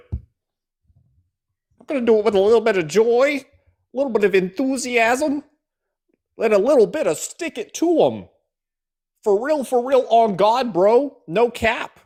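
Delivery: very high, loud, put-on folksy hyped voice. Commenting on a politician's folksy Michigan act, mocking Haley Stevens' folksy talk. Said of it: "that's what that sounds like".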